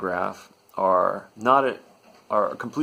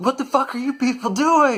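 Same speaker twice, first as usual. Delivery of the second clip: very high, fed-up, exasperated yelling outburst; 3 dB louder than usual. Retelling how a stuck passenger lost his marbles: imitating a passenger yelling. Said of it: "he yells out".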